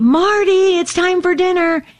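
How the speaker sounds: loud, high, belted-out call. Demonstrating how she calls out across the house at home, loud call across the house. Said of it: "it's pretty loud".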